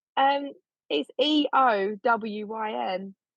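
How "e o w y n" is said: slow, spelled out one letter at a time. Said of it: "I don't know how to say it".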